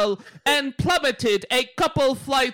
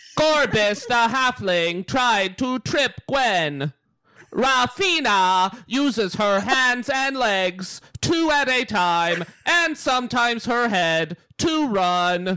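mock robotic computer voice; 2 semitones lower than usual. Reading the game recap aloud; Gumby movie computer voice. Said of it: "by the computer in the Gumby movie".

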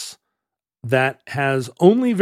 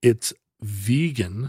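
very slow, drawn-out delivery. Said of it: "Could you talk slower?".

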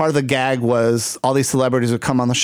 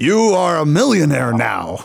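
put-on prize announcer voice with swooping pitch; 3 semitones higher than usual. Joking that you sound like the man from Publishers Clearinghouse, do an Ed McMahon voice. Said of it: "i sound like ed mcmahon from publishers clearinghouse".

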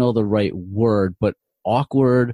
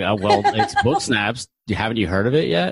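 self-assured, slow, very drawn out, swooping tone. Showing how the answer should have sounded: putting on a confident tone. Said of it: "you should have sounded more confident".

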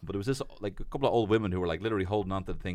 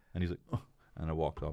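plain

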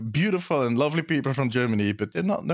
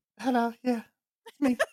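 squeaked, very high put-on voice; 10 semitones higher than usual. Imitating the other speaker's flat greeting: impression of Hannah saying hello. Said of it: "my impression of you".

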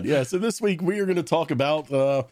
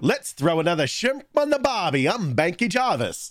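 bad, fake put-on Australian accent; 4 semitones higher than usual. Podcast host opens this week's show in a bad Australian accent. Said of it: "disappointed in your shitty accents".

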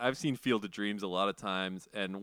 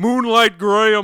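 very loud, very high, in-your-face bellow, right up close; 12 semitones higher, 17 dB louder than usual. Imagining someone suddenly right up in their face: imitating James Earl Jones. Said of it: "James Earl Jones is gonna s-, be, like, right up in my face".

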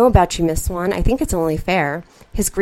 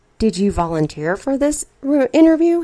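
straightforward inquiring tone, pitched up; 6 semitones higher than usual. A man questions the woman who is interviewing him, asking quietly. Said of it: "He asks quietly".

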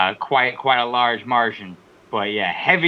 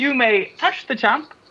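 put-on poor British accent, very high; 12 semitones higher than usual. Imitating a wrestler by giving her a British accent. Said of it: "give Becky Lynch a British accent".

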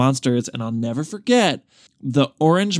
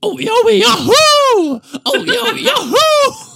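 very high, very slow, loud, drawn-out fox voice; 6 dB louder than usual. Acting out a new take where a fox walks in and starts talking, fox character voice. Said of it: "the fox walks in the door and he starts talking".

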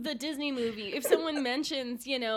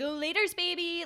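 put-on sincere, straight-faced, earnest delivery; 4 semitones higher than usual. Retelling how a roommate's boyfriend says the line: imitating a very genuine delivery. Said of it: "says it in a very, like, genuine".

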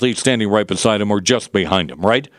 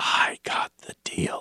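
very quiet, slow, breathy, hushed whisper. Retelling what the president said at an event: imitating someone whispering. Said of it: "he's whispering".

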